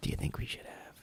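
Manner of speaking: intense whisper, very quiet, barely audible. Mocking how couples on shows talk to each other: whispering intensely. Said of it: "Whispering intensely".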